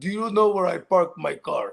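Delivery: slow, put-on Hungarian accent in English. Telling a story about a friend who always loses his car, doing Attila's Hungarian accent. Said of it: "he has the accent".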